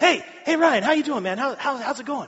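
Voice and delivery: amped, over-caffeinated energy. Retelling a greeting from someone who is amped at all times, imitating amped Chad. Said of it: "Chad is like amped at all times".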